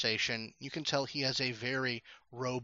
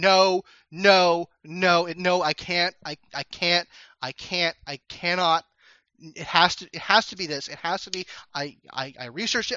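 very loud, high, frantic, panicked stammering outburst; 5 semitones higher, 9 dB louder than usual. Voicing a person on lobby camera footage, shouting in a near freak out. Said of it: "this person just starts shouting".

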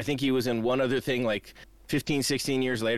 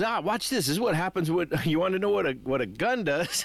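mock thrilled, worked-up, eager, excited delivery; 5 semitones higher than usual. Describing a scene at the chocolate river, acting out his excitement. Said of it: "He's all excited about it".

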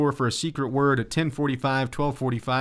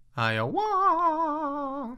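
very high, swooping, stretched-out dying cry; 13 semitones higher than usual. Pronouncing a state name as a character would while dying: dying Mario voice. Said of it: "what Mario would say if he was pronouncing that state while dying".

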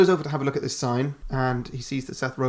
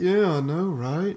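high-pitched, slow, stoned drawl; 5 semitones higher than usual. Retelling a movie scene, voicing James: stoned James Franco voice. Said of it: "James Franco High voice".

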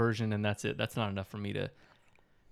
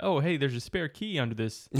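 usual speaking voice

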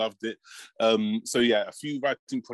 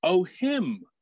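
deflated, let-down, disappointed call, pitched up; 9 semitones higher than usual. Retelling a heckle shouted from the back of the crowd: imitating a disappointed heckler. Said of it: "I wasn't sure if I had that disappointed".

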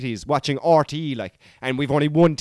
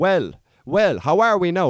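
put-on Tipperary Irish accent, much slower; 2 semitones higher than usual. Imitating how a man from Tipperary talks: Tipperary Irish accent. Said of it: "he's from Tipperary".

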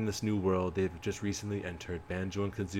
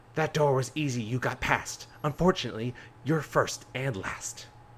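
super gross, high witch voice; 5 semitones higher, 4 dB louder than usual. Narrator voices a witch taunting the heroes as they pass the door, super gross witch voice. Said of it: "a voice of a super gross witch say".

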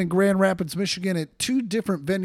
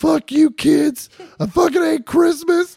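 put-on scream, much higher, louder; 9 semitones higher, 7 dB louder than usual. Mocking a man playing the Grinch for kids, imitating someone screaming. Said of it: "Why does he keep screaming".

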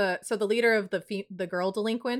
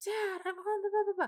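mock, very high, hushed, freaked-out panicky voice; 11 semitones higher, 7 dB quieter than usual. Retelling a story, a girl phones her dad on a flip phone: imitating a girl freaking out. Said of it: "she's just freaking out".

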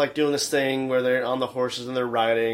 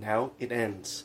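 soft fake Scottish accent, played for fun; 2 semitones lower, 8 dB quieter than usual. Acting out a line from a fight scene, in a fake scottish accent. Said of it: "like in his fake Scottish accent".

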